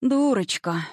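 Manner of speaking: high, gentle, tender and affectionate voice. An old woman answers a young woman's plea for help, tenderly. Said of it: "ласково произнесла старушка".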